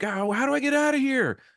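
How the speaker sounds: put-on high, panicky, freaked-out girl voice. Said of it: "and she's freaking out".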